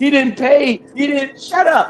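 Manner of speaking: put-on high, slow, whiny little kid voice.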